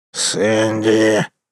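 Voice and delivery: hissed through gritted teeth. A wolf calls to his companion during a saloon quarrel: hissing through teeth. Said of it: "с шипением процедил волк".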